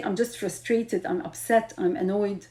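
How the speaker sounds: ordinary talk, nothing marked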